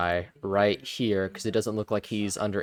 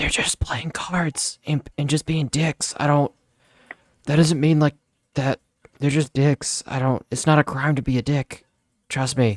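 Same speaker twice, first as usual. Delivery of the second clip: whispered character voice, higher pitched; 6 semitones higher, 5 dB louder than usual. Talbot answers his imp's question about the card players, whispering back. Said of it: "Talbot whispers back".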